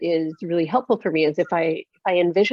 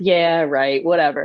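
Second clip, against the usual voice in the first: put-on snarky voice, much slower. Speaker acts out the little inner voice that answers their wishes, voicing a snarky inner voice. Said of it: "it'll say something snarky".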